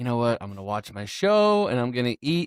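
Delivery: ordinary delivery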